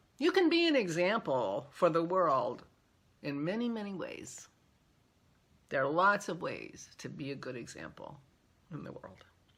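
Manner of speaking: loud, tearful speech through crying. Speaker talks about being impressed by someone; crying. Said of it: "Okay, I'm crying".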